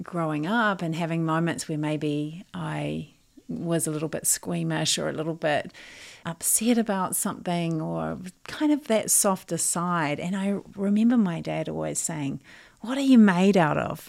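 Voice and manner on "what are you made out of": loud put-on Australian accent. Recalling childhood, the speaker quotes their dad, imitating dad's australian accent. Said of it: "in his Australian accent".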